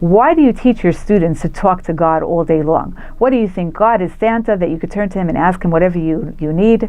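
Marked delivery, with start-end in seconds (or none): none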